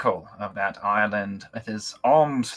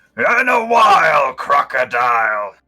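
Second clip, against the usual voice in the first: very loud, booming, monstrous voice; 4 semitones higher, 9 dB louder than usual. The narrator voices a dark object surfacing in front of the players: monstrous voice. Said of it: "in a monstrous voice it says".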